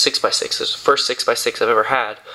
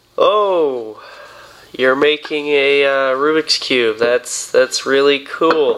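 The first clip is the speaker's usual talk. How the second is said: mock, very sarcastic slow drawl, oh stretched long; 2 semitones higher than usual. Recounting what people told him while he was making something: imitating a very sarcastic voice. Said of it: "in like a very sarcastic voice".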